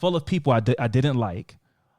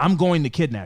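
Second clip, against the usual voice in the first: put-on gravelly old man voice. Quoting a man the speaker used to greet, gravelly old man voice. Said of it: "in his gravelly old voice".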